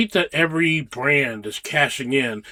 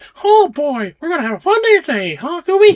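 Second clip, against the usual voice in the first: very high, loud cartoon-style squeak; 14 semitones higher, 7 dB louder than usual. Joking with Goofy in a bad Disney impression: bad Mickey Mouse impression. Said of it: "our bad n- Disney impressions".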